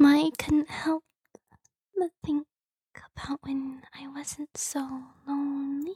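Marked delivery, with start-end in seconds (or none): 2.0-5.9 soft, close whisper. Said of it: "keep whispering in your ear".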